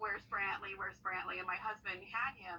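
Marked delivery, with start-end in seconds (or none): none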